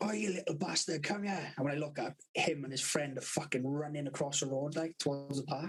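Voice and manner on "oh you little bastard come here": acted man's voice, mildly yelling. Retelling how a bloke shouted at a boy lighting a fire: imitating a bloke shouting. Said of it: "this fucking bloke shouting at me".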